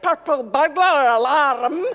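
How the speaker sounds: very loud put-on Scottish accent, alarm stretched out. Trying a phrase Scottish people supposedly can't say: Scottish accent. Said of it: "I use my Scottish accent".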